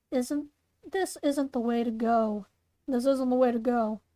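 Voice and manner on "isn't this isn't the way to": ordinary delivery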